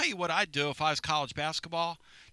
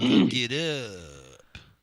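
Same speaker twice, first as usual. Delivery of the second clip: low, drawn-out, rising habitual way of talking; 6 semitones lower, 6 dB louder than usual. Showing how a man who asked about wrestling talked, imitating how a man talked. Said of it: "and that's how he talked".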